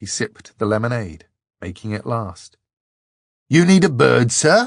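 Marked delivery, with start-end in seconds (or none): 3.5-4.7 very loud, high, cheerful call. Narrating a voice close at hand offering him a bird, cheery voice. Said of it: "asked a cheery voice".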